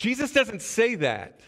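ordinary delivery

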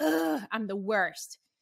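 put-on fed-up exasperation, loud drawn-out frustrated groan. Retelling burning dinner and scolding oneself: imitating own past frustration. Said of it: "I was so frustrated".

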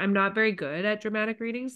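ordinary delivery

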